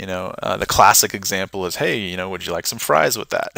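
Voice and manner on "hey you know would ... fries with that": usual speaking voice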